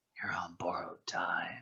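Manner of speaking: very hushed, barely audible, menacing, threatening whisper. Acting out what a character should whisper to a rival: imitating a menacing whisper. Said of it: "she leans in and whispers".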